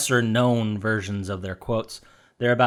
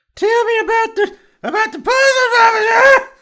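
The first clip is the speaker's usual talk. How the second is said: very high, loud, put-on young lady voice; 7 dB louder than usual. Speaker plays a character asking about the game's puzzles; young lady character voice. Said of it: "Let me get in a character".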